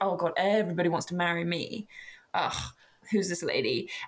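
put-on dismissive gentleman voice. Retelling a novel's plot, voicing a character: acting dismissive as Mr Beaumaris. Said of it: "he's a bit, like, dismissive".

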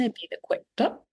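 New Zealand accent. Plugging a guest's podcast, repeating its name in a kiwi accent. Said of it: "with my Kiwi accent".

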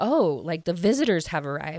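normal talking voice

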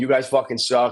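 ordinary talk

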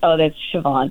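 ordinary delivery

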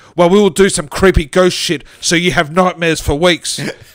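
loud, enraged, furious scream. Reading a story aloud, an infuriated ghost character threatens: screaming. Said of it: "stood over Joey and screamed".

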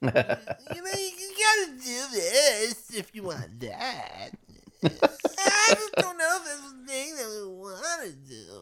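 put-on smarmy wheedling voice. Imitating a commentator whose voice the speaker can't stand: imitating a smarmy wheedling voice. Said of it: "smarmy and wheedling".

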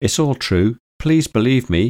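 high, imploring, pleading voice. Narrator reads a voice answering a doubting woman, imploring. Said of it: "implored the voice".

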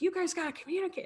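high, fast yell.

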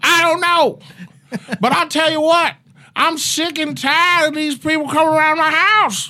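very high-pitched, fired-up voice. Retelling own upset reaction to a theft: Dave Chappelle voice. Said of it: "Why do you turn into Dave Chappelle".

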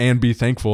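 ordinary delivery

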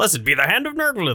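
high, clumsy, bad cartoon lobster-alien voice. Asked to do the voice, attempting the Futurama lobster guy voice. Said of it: "Do that".

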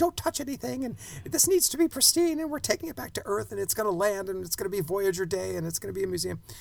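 high, very nervous, freaking-out voice. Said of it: "this very nervous museum curator is freaking out".

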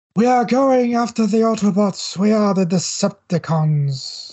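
menacing robot villain voice. Speaker discussing the character's voice actor, then doing his Shockwave voice. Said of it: "that's my Shockwave voice".

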